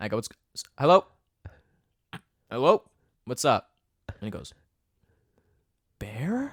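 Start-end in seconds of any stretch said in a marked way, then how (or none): 6.0-6.5 earnest, worried, deeply concerned, raised pitch. Retelling how a caller said bear on the phone: mock-concerned bear. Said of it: "Just like that, the most concern in his voice".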